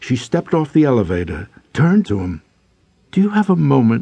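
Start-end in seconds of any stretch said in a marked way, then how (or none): 3.1-4.0 hopeful tone, much higher. A narrator reads a woman's question to a man as she leaves the elevator, hopefully. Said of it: "she asked hopefully".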